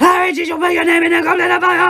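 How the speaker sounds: high, loud, frantic, repeated yelling.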